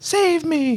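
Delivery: very high storybook princess voice. Speaker shows how they voice the princess when reading to their kids. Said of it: "change my voice to the princess".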